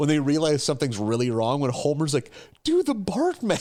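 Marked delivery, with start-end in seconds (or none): 2.6-3.6 frantic, very high-pitched, panicked voice. Retelling a scene where Homer panics: panicked Homer Simpson impression. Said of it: "in a panic tone".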